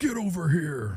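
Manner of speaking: very deep, commanding voice. Answering whether a film character sounds like Batman: Scorpion voice.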